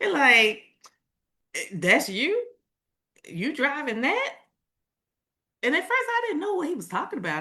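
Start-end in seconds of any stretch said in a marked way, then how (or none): 1.5-4.3 put-on Southern country accent with higher pitch. Retelling a cousin's remarks about the car: imitating a Southern country accent. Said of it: "I was gonna try to imitate his voice".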